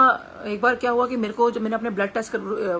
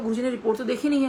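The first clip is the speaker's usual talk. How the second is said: normal talking voice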